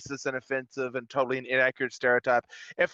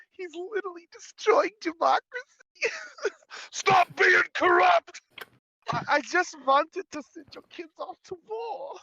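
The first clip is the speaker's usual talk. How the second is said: put-on German accent, pitched very high. Speaker offering to voice the exchange himself, in a German accent. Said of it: "why is that German?".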